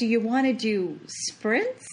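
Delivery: ordinary talk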